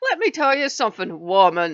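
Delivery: horrible fake Irish accent.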